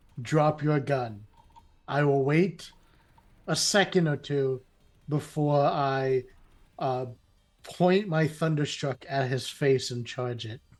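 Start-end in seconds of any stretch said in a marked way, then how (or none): 0.3-1.3 loud, frightening robotic voice, much lower pitch. Player tells another player to drop his gun in a loud, scary robotic voice. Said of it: "tell him in a very loud, scary, robotic voice".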